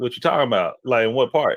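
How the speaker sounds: plain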